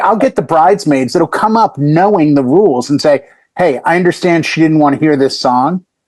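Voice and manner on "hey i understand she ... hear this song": normal talking voice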